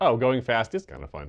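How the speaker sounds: ordinary delivery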